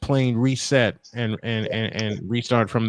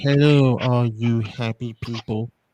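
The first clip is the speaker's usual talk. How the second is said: cartoon character voice. Showing another speaker how the Droopy voice goes: Droopy voice. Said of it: "Droopy is this voice".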